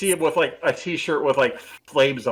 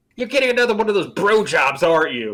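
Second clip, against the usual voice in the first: put-on high old-lady voice with Brooklyn accent; 5 semitones higher, 4 dB louder than usual. Imagining how Angel would answer, in Angel as old Brooklyn lady voice. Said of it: "imagining Angel's like an old Brooklyn lady".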